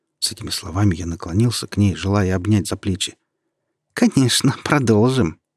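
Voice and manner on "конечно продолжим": spiteful, snide snickering with high giggle. Narrating her reply as she turns toward him, spiteful snicker. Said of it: "ехидно прохихикала она".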